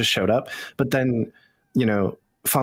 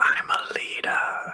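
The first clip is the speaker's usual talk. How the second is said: hushed whisper, under the breath. Narrating what Ling does after an awkward exchange, whispering to herself. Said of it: "She just whispers to herself".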